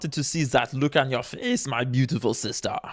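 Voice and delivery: put-on German-accented delivery. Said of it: "That's what a German accent says".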